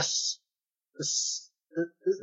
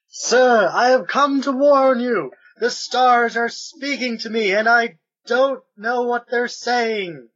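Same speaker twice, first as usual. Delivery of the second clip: loud, high-pitched yell; 7 semitones higher, 5 dB louder than usual. Voicing a character knocking at a door of a house: yelling. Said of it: "and start yelling".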